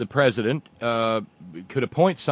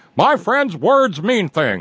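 put-on ranting talk-radio scream, high, loud, swinging tune; 7 semitones higher, 6 dB louder than usual. Recalling 90s radio, the speaker mocks a radio host, imitating Rush Limbaugh screaming. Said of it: "hearing Flush Flimball scream".

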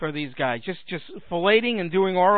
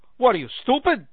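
put-on Brooklyn accent; 6 semitones higher than usual. Addressing an audience, a speaker imagines judgment in the afterlife: Jesus with a Brooklyn accent. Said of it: "Jesus has a Brooklyn accent".

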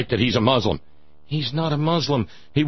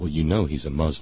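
very deep, confiding, conspiratorial tone; 11 semitones lower, 4 dB quieter than usual. Speaker retells what a woman said to them, in a mock-conspiratorial voice. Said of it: "in a sort of conspiratorial voice".

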